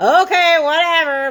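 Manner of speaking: mock sarcastic brush-off. Retelling a reply to a husband: imitating own sarcastic tone. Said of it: "sarcastic tone to him".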